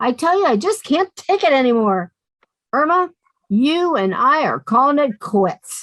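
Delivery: furious, angry voice. Breaking off with a friend during a quarrel: angry. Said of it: "I've never seen her so angry".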